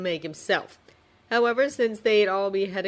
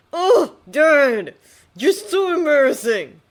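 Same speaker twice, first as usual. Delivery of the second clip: very loud, drawn-out, swooping pretend offense; 8 semitones higher, 10 dB louder than usual. Reading the younger man's reply to teasing in a story: mock affront. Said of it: "his tone filled with mock affront".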